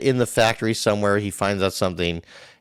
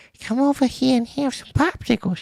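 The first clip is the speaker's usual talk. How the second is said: put-on very high creepy old lady voice. Playing up a creepy old church lady voice to make another speaker laugh. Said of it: "You sound like a creepy lady out of a fucking church".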